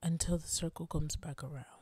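calm, low, hushed public-radio announcer delivery. Repeating the other speaker's parting line just after the goodbyes, in an NPR voice. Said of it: "That was like the NPR voice".

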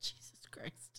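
soft, voiceless, shocked whisper.

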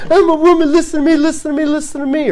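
high, shrieking, wailing, crying tantrum outburst. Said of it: "kicking and screaming and crying".

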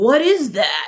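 high, sudden, acted-out yell, carried far. Retelling a coworker calling from down the hallway: imitating someone yelling. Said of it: "he yells".

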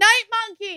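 shrieking, very high-pitched screaming cry. Retelling a movie, acting out a character's girlfriend screaming for help: retelling a scream. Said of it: "she's screaming at him".

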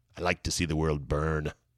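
poorly done villain voice, very low and soft. Say what a player becomes when he starts lighting fires all over the boat, bad Joker impression. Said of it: "So that was a bad Joker impression".

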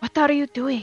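words hissed out. A character leans down at the campfire to confront another, hissing. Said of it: "she hisses to her".

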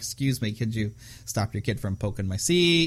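plain

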